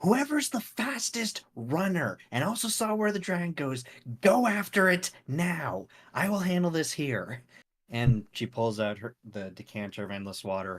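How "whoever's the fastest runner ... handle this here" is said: loud, high, barking yell. A game character shouts to the group after a dragon lands, yelling orders. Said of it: "kind of just yells".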